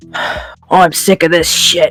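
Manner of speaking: put-on Cockney-Australian accent. Showing the D and D character Captain Mar: Captain Mar voice, Cockney-Australian mix. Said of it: "he's kinda like".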